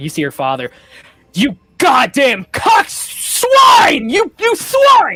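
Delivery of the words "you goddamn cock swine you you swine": enraged screaming, very high, shrill, very slow. Voicing a father who starts screaming at a con man: screaming in rage. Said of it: "And just starts screaming".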